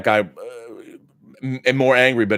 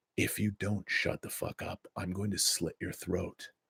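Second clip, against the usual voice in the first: put-on voice, whispered, very quiet; 4 semitones lower, 17 dB quieter than usual. Retelling a threat to people talking in a theater: Clint Eastwood voice. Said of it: "I like to put on my Clint Eastwood voice".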